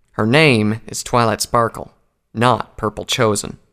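plain

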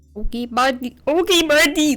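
put-on Canadian accent. Trying out a voice for a made-up game character, in a Canadian accent. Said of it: "That sounds more Canadian".

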